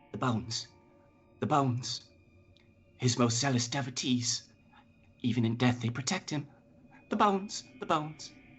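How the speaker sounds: weak, thin, fast, nervous piping voice. Voicing a spirit speaking inside a player's head: weak piping nervous voice. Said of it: "you hear her say nervously".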